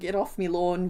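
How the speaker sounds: put-on Scottish accent. Voicing what a palace cat seems to scream, heavy Scottish accent. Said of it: "In a heavy Scottish accent".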